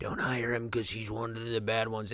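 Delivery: low, soft whisper. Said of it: "crawls up his leg and whispers in his ear".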